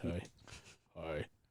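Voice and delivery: fake man's voice, breathy and very quiet. Demonstrating the so-called man voice listeners hear, in a put-on man voice. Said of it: "The man voice".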